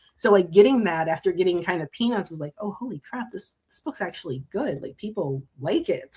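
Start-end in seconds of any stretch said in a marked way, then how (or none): 2.6-6.2 shocked, amazed, caught-off-guard astonishment. Retelling first success with the book, imitating own past shock. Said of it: "it was a shock for me".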